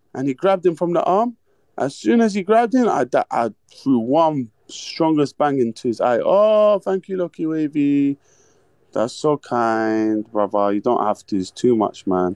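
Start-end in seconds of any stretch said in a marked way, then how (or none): 6.3-12.4 sweet, tender, gentle, grateful tone. Retelling a street fight, the speaker acts out someone's thanks to him: soft voice. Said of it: "why are you saying it in a soft way?".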